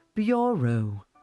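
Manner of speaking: 'bureau' pronounced with British accent. Sharing a tip on learning a British accent: British accent on 'bureau'. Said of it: "one of the best words for learning a British accent is bureau, because it's like bureau".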